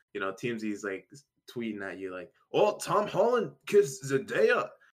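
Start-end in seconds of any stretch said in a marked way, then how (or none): 2.5-4.6 jokey, put-on Scottish brogue, pitched up. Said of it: "I don't know why I'm making T M Z Scottish".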